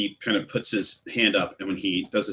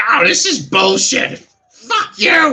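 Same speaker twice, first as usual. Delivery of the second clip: angry goblin shriek, very loud and very high; 10 dB louder than usual. Game master voices a goblin at the bar yelling out at the man he played with. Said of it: "kind of like yell out".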